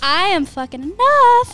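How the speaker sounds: very loud, fired-up enthusiasm. Repeating an affirmation after the other speaker, with more enthusiasm. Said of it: "One more time with more enthusiasm".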